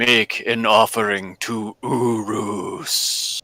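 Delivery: deep, dark voice. Narrating to the party, voicing a voice heard in their skulls: deep dark voice. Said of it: "you hear a deep and dark voice say".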